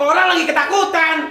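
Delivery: high, loud, frightened pleading tone.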